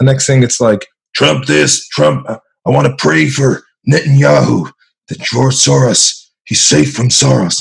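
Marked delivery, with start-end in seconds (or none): 1.1-7.6 put-on rough, creaky voice, ground out. Mocking how a talk figure used to sound: Alex Jones impression. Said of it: "anytime I do a Jones impression".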